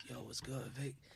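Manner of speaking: deep, dropped voice, very soft and hushed. Quoting a mate's greeting after he hit puberty: Angel's low voice. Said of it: "with a low voice like".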